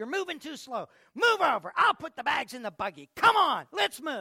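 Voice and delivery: high, loud, impatient shouting. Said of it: "she started yelling at her".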